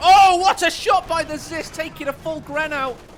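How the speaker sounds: high, loud, excited play-by-play announcer shout.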